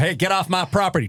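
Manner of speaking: put-on American accent. Imagining aliens landing, the speaker acts out an American reacting: put-on American accent. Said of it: "Do you want an American be like".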